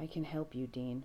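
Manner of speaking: soft, gentle, quietly certain. A man tells a skeptical dean he can help him, soft and sure. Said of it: "His voice is so soft, so sure".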